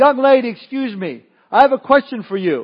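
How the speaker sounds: big booming voice. Telling a story, voicing a man in a crowd who speaks up to a young lady, booming voice. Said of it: "speaks up with this booming voice".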